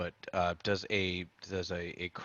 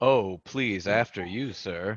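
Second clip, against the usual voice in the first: acted-out sarcastic politeness; 7 dB louder than usual. Describing motioning toward a general store, the speaker acts it out; retelling a sarcastic 'after you'. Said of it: "a very sarcastic motion".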